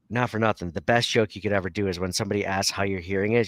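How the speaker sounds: usual speaking voice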